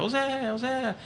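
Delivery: high-pitched call in a parrot-like voice.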